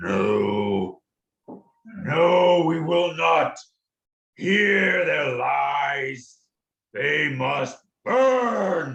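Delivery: very slow, bellowing huge creature voice. Narrating a scene, voicing the larger of two voices: larger voice bellowing. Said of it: "the larger voice says".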